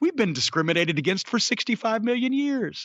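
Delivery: sensible, reasonable, matter-of-fact, ordinary-guy delivery. Quoting a wrestler's promo: imitating Luchasaurus sounding reasonable. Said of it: "sounds like a reasonable person and says".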